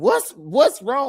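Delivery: high, loud, startled and frightened yell. Retelling running downstairs during a break-in: imitating own startled scream. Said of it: "So I'm screaming like".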